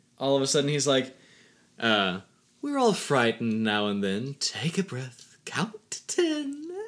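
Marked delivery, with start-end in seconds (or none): 1.8-6.7 put-on condescending, patronizing talking-down tone. Recapping a scene, quoting a character mock-condescendingly. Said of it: "he becomes really condescending".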